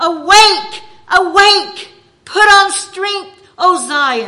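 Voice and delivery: very loud, slow, forceful declamation. Reading a passage aloud, speaker warns listeners and uses a loud, strong voice. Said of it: "I'm going to get loud".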